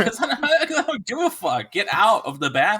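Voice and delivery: very high, shrill, swooping, all-out yell. Retelling ordering kids out of the bathroom: imitating himself yelling. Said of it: "while I'm yelling at them".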